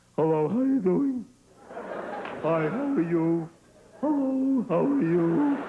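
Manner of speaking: put-on very slow, cracking teenage voice. Acting out a fifteen-year-old boy's new voice: imitating a fifteen-year-old's cracking voice. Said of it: "you get this voice".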